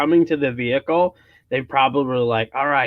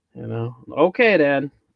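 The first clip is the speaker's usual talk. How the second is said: plain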